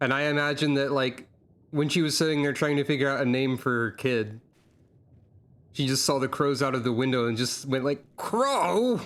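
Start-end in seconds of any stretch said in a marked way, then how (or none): 8.2-9.0 play-acted, ridiculous, fed-up wail, drawn-out, way up high. Imagining a mother naming her baby after crows: imitating an exasperated, ridiculous voice. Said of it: "the most exasperated, ridiculous voice".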